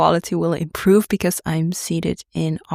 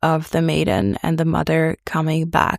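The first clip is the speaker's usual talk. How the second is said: usual speaking voice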